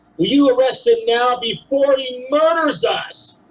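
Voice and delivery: high, slow, frantic, desperate yelling.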